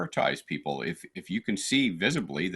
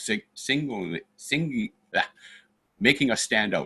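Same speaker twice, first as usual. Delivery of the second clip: slow, halting stutter with stumbling restarts on singling; 3 semitones higher than usual. Describing being made to stand out in a store, stuttering. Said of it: "Sorry, I'm stuttering".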